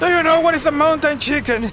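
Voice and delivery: mock screaming in a man's voice. Retelling a short where a guy screams a question: imitating a guy screaming. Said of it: "he was screaming, like".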